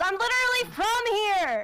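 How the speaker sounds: very high, drawn-out character shout. Voicing a character who yells at a man storming off: yelling in character. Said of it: "Snongle just kinda yells".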